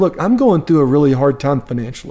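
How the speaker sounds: ordinary delivery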